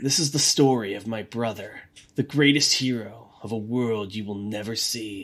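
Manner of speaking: grave, very serious storytelling voice, low and soft. Doing the Luigi voiceover for the first scene: very serious Luigi voice. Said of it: "I'm gonna give Luigi a very serious voice".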